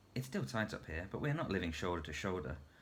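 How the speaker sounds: ordinary delivery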